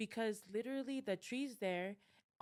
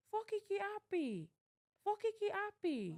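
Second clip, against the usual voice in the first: play-acted, very high, drawn-out yell; 12 semitones higher than usual. Retelling a voice yelling back at the speaker; imitating a yell. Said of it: "the voice yells back and says".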